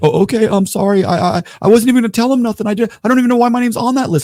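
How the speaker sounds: very high, loud, flustered, panicked stammering. Retelling how a kid answered a threat: imitating a panicking kid. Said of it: "the kid's panicking".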